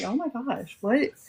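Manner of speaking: alarmed, flustered, panicked outburst. Retelling a knock at the door: imitating own panicked words.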